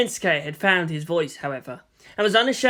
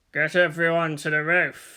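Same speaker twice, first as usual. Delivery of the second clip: rumbling, distorted voice. Narrator reads Kensuke's command in his rumbling, distorted voice. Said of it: "in a rumbling, distorted voice".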